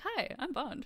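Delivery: very high, loud, cheery chirping voice. Retelling how Bond sounds pulling her from the ocean: imitating a cheery Bond. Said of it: "he just sounds, like, so cheery".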